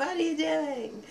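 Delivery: put-on high, eighty-year-old grandmother voice. Retelling what they said as a child walking in on their parents, old grandmother voice. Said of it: "I said it like that, like an eighty year old grandmother".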